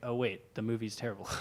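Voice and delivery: ordinary talk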